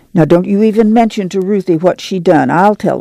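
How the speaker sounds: ordinary delivery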